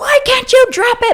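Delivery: put-on angry scream, pitched very high, shrill. Retelling a family fight with Jade, retelling angry screaming. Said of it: "Jade and I are screaming".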